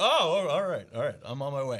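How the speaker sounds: put-on dog voice. Retelling a video, voicing the dog's reply. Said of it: "the dog's like".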